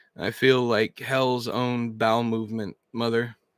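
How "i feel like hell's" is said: ordinary delivery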